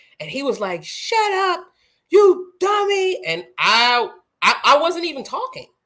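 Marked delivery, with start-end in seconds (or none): 0.8-3.3 put-on pitched-way-up, drawn-out, tearful, angry crying child voice. Retelling what a crying nephew said in anger: imitating an angry crying child. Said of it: "and he was angry. He was crying".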